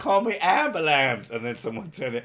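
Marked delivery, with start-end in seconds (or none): 0.0-1.3 high, raised cry of a man in pain. Retelling what a guy punched on a bus said: imitating his cry. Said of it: "And he went".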